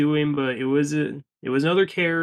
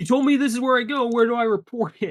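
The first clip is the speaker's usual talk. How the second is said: imitated woman's yelling voice, higher; 8 semitones higher than usual. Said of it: "prompts more yelling and screaming".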